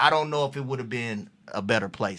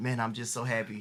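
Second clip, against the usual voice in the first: put-on humble voice, quieter; 6 dB quieter than usual. Retelling what a rookie said at training camp: imitating Gerald being humble. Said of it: "Gerald is humble, real humble".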